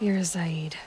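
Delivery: hushed, wary, knowing whisper. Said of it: "I can tell from your tone".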